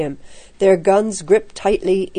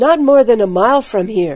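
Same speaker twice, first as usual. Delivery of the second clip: ordinary delivery, nothing marked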